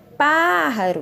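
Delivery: pájaro with strong stress on first syllable pá. Portuguese lesson on the Spanish word pájaro: stress on pá in pájaro. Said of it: "A sílaba que eu pronunciei com mais intensidade foi pá".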